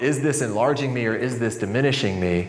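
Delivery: ordinary delivery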